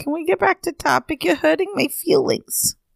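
put-on small, high, childlike voice, like a hurt kid. Teased on the podcast about age, asking to get back to topic, little voice. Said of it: "why did you suddenly little?".

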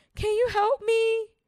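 put-on very high, loud childlike pleading little-kid voice. Thumb stuck in a door, calling him for help: mimicking a child's voice. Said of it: "just like a child".

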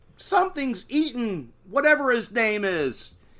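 acted, very high-pitched, stretched-out, drawn-out scream. Retelling a movie scene where a woman runs back, imitating a scream. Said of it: "she screams and she runs back".

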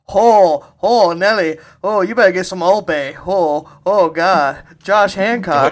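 very loud, high put-on Cajun accent. Imagining what the guy towing the car says, in a Cajun-sounding accent. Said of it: "What is he, Cajun?".

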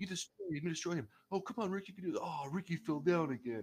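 put-on excited, cheering, kid-like voice. Picking up another speaker's bit about a commentator: Taz impression, like a little kid. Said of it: "You sound like a little kid".

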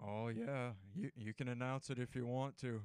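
voice pitched way down. Retelling a coach's reply from a segment: Nick Saban impression. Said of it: "that was a pretty good Nick Saban impression".

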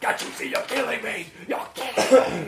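loud, completely unglued, unravelling outburst. Retelling a film's ending scene, imitating Oliver Reed losing his mind. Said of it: "he loses his mind like that".

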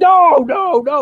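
put-on shrill, very high, loud, angry furious screaming. Describing a film scene, the speaker acts out General Ross's reaction; retelling General Ross screaming.

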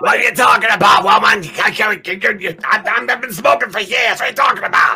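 loud, high-pitched smoker grandma voice. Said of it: "pictured her to talk like".

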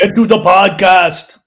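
very loud, very slow, booming action-movie bark. Answering a request from another speaker: Arnold Schwarzenegger impression. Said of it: "do your Arnold impersonation".

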